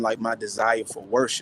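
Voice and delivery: ordinary talk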